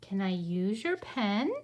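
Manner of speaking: rising pitch at the end on pen. Pronunciation lesson asking a question, rising pitch on pen. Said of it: "my voice goes up because I'm asking".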